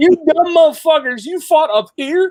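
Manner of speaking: loud, high-pitched scoffing.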